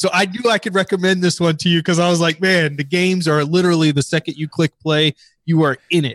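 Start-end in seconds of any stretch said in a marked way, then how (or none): none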